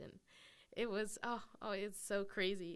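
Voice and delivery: tearful crying. Sharing their story with a host, crying. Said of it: "Sorry, I'm like crying".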